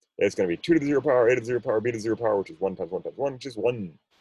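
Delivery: very rapid-fire, rattled-off, very fast delivery. Working through an algebra problem aloud, very fast. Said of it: "I said that really fast".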